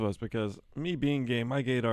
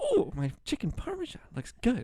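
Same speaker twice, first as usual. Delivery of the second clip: very high, squeaky voice with swooping pitch; 12 semitones higher than usual. Retelling how Jeff exclaimed over his chicken parmesan, imitating Jeff's really high voice. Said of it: "In a really high voice".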